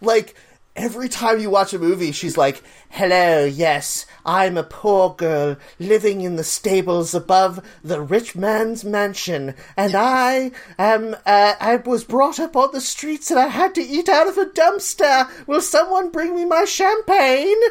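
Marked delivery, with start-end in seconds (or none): 2.9-17.6 American accent attempted very badly, clearly off. Imitating an actress failing at an American accent: Audrey Hepburn impression. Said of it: "the accent she's supposed to be doing in the movie, Audrey Hepburn is atrociously terrible".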